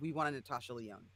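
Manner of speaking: ordinary talk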